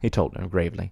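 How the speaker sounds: plain reading voice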